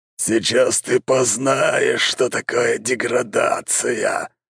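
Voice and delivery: monster voice, hissing the words. Narrator voices a monster gripping the healer by the neck, hissing monster voice. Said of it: "прошипел монстр".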